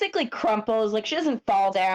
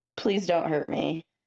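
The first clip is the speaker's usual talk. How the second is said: begging mumble, muffled as if through a hand; 3 semitones lower than usual. Player's character, held with a hand over the mouth, mumbling into that hand. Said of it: "try to mumble into his hand".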